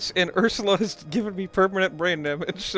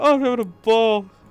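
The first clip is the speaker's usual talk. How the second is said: talking through laughter, higher pitch and louder; 3 semitones higher, 5 dB louder than usual. Reacting to something funny just made, laughing while talking. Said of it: "I can't stop laughing".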